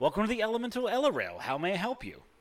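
high, very friendly, welcoming voice. A kiosk attendant at a station waves and greets the travelers, very friendly greeting. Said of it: "sort of waves very friendly and says".

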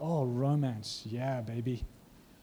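very slow, drawn-out, hammed-up, put-on seductive voice. Preaching about romance with God, then a put-on romantic voice. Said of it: "Why am I talking like that?".

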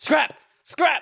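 very high-pitched, loud shouting. Retelling a trip to Galaxy's Edge, the speaker acts out a companion greeting passers-by, retelling a yell. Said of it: "he was just yelling".

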